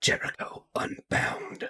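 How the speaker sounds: barely voiced, very hushed, breathy whisper. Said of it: "And he whispers".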